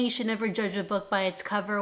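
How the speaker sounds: usual speaking voice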